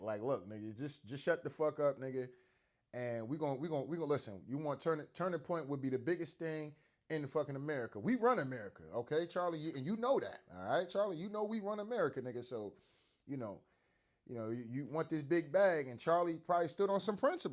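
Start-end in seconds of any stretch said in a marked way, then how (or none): none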